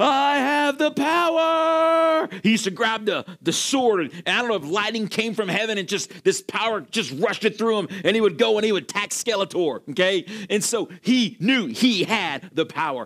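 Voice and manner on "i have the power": very high, very slow, drawn-out acted cry. Retelling a hero from childhood toys: He-Man battle cry. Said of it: "He-Man cry was".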